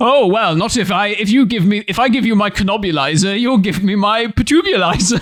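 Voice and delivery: put-on theatrical hero voice. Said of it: "like a badly staged play".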